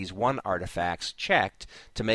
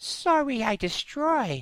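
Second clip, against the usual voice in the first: strange, very high-pitched put-on voice. Narrating a story, the Tholian Bright Eyes speaks: odd-sounding Bright Eyes voice. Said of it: "I kind of did a voice".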